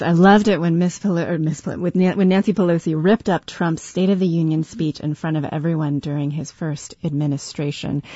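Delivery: normal talking voice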